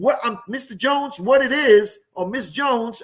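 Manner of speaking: self-assured, certain tone. Showing how to introduce yourself to people: confident. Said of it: "you explain it with confidence".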